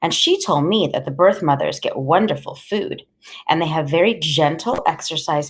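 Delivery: plain reading voice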